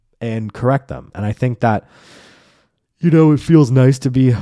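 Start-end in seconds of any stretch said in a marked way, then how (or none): 3.3-4.3 talking through a yawn, louder. A show host talking to listeners, yawning mid-sentence. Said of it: "sorry about the yawn".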